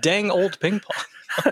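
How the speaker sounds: slow, clearly enunciated put-on English accent. Joking about how to say the rating phrase: put-on english accent. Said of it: "Just say it really clearly in an English accent".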